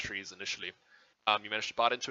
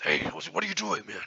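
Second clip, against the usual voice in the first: orc voice, higher and faster; 6 semitones higher, 6 dB louder than usual. Game master voices the caged orc next to the old man: orc voice. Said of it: "the orc next to him".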